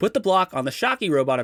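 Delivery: plain reading voice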